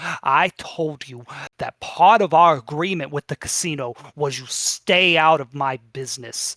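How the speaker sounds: loud, panicked voice projected across the room. Voicing the panicked Xanathar addressing the salesman: panicked voice. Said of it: "The Xanathar is panicked".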